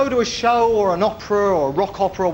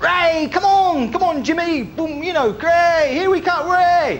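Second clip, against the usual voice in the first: high, drawn-out cheering like a sports fan; 8 semitones higher than usual.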